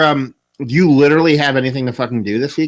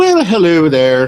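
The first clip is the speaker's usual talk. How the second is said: horrible fake Irish accent, pitched up; 5 semitones higher, 4 dB louder than usual. Host opening the Lovely Radio show, in a really horrible Irish accent. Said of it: "talk in a really horrible fucking Irish accent".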